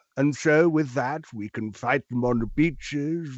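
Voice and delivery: normal voice with tongue stuck to one side. Doing a wartime speech with tongue fixed in mouth, Winston Churchill impression. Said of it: "I'm doing Winston Churchill, I am basically doing the same voice as normal, but I have my tongue fixed to the top left of my mouth".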